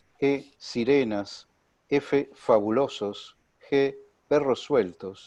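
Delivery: slow, spaced-out reading, one item at a time. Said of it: "un poquito más despacio".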